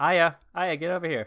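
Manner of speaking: loud, high-pitched calling out.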